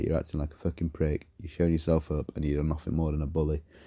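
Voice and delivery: ordinary talk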